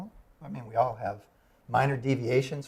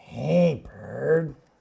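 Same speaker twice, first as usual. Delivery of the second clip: loud, rough, creaky big-creature puppet voice; 3 semitones higher, 8 dB louder than usual. Asked by a co-host to say a greeting, doing the Snuffleupagus voice. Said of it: "In the Snuffleupagus voice".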